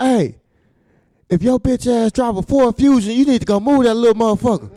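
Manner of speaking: loud, high, fast hollering MC callout.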